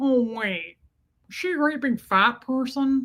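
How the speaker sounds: skin-crawling, creepy, unsettling thriller killer voice. Quoting a creepy movie line: Buffalo Bill voice. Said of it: "when he's Buffalo Bill and he goes".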